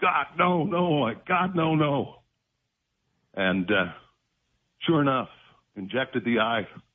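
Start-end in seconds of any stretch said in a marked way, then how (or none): 0.0-2.2 put-on very slow, high, dragged-out screaming. Retelling a needle being put to the eye: retelling own screaming. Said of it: "and I'm screaming".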